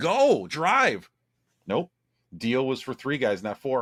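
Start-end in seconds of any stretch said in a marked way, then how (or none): 0.0-1.1 mock screaming, high-pitched. Retelling thieves in a car screaming at the driver, imitating people screaming. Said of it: "they're all just screaming at him".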